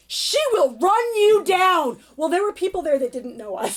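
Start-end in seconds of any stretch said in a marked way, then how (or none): 0.1-2.0 put-on shout, higher pitched. Retelling warning nephews crossing the street: retelling a yell. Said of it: "so I yell".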